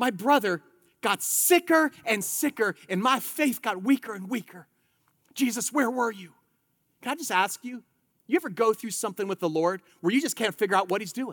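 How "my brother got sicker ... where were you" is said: put-on pained voice. Voicing Martha telling Jesus her brother died: imitating Martha's pained voice. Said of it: "you hear the pain in her voice".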